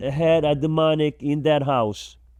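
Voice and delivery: ordinary talk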